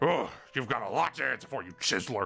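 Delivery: strained, throat-straining sheriff character voice. Voicing a sheriff who confronts a card player: strained sheriff character voice. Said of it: "if I commit to that voice the whole time, I will have laryngitis".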